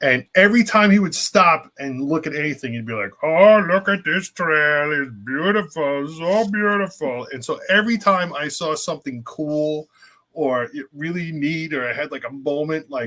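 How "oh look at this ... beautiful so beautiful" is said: put-on puppet-like, puppet-ish older man's voice. Retelling an older man from Florida admiring a trail, imitating his Muppet-like voice. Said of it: "He sounded like a Muppet to me".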